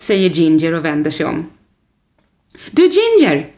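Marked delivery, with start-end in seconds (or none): 2.7-3.4 very high-pitched called-out voice. Reading a story, Rodolfo calls to Ginger as she turns away: calling out. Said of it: "ropar Rodolfo".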